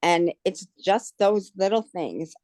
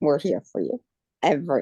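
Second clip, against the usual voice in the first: choked-up, swooping voice full of emotion; 3 semitones lower than usual. Thanking a support group and a surgeon, emotional and choked up. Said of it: "I'm gonna get more emotional".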